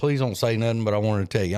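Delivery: ordinary delivery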